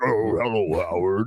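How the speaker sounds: deep, low, growling, put-on devil voice. Imitating a voice-changer effect that talks like the devil: imitating a devil voice. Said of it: "I'm gonna talk like the devil now".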